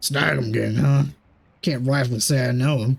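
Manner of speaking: deep, gravelly, raspy character voice. Voicing a character who meets Team Snag em: deep, gravelly character voice. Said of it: "It's like a deep, gravelly one".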